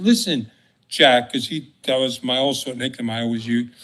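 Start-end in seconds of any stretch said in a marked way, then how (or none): none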